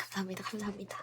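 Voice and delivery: soft, whispered delivery.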